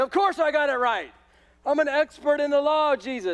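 mock smug puffed-up tone. Picturing a religious lawyer proud of his answer to jesus: imitating a smug lawyer. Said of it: "puffing his chest out a little bit".

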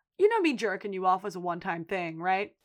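dry, unbothered, dead straight delivery with no reaction. Recapping a show scene, acting out the girl's answer to him, imitating a deadpan reply. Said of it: "the girl deadpan looks him in the face and goes".

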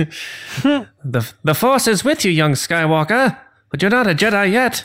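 high, light, plain everyday speaking voice. Imagining Vader lines said by David Prowse: David Prowse voice. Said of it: "if they were said by David Prowse".

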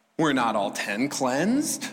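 mocking, sarcastic, swooping tone. Retelling a story and acting out a line with put-on sarcastic tone. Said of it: "Watch Jesus' sarcasm".

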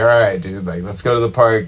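ordinary delivery

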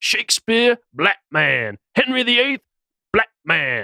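high-pitched mock street preacher proclaiming.

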